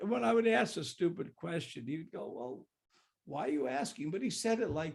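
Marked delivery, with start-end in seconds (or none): 2.3-4.1 put-on voice spoken through laughter. Recalling how he was answered after asking a stupid question, imitating a laughing question. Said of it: "with a twinkle in his eye and a laugh".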